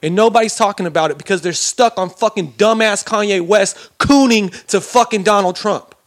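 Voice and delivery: heated, fired-up, angry ranting. Talking to the audience, the speaker rants: heated angry rant. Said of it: "I'm a little fucking heated".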